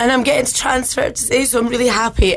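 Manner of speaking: crying through happy tears, tearful, high voice. Sharing embryo transfer news, crying happy tears. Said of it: "Sorry, I'm totally crying here".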